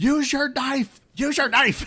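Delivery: piercing, very high-pitched shouting. Retelling shouting at the character during cutscenes: imitating own shouting. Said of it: "I'm literally shouting".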